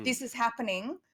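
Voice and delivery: normal talking voice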